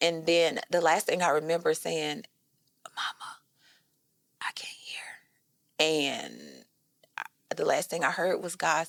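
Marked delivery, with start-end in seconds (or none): 3.0-5.0 put-on whisper, quieter. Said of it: "So I only speak in a whisper".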